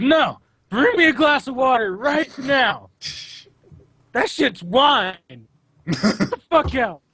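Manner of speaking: mock very high-pitched, furious, angry drunk rant. Acting out an angry scene at a bar: imitating an angry drunk Jesus. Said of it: "Jesus on, like, an angry pussy hunt".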